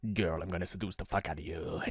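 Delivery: very hushed, sultry, seductive Latin lover voice. Voicing a man in a picture as a stereotypical Latin lover: voicing a seductive Latin lover. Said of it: "stereotypical, um, Latin lover that also happens to speak Spanish".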